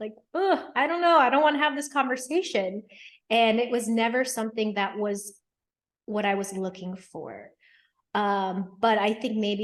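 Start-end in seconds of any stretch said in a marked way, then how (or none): 0.3-2.8 high, loud, reluctant, put-off groan. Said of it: "some part of me would like, like".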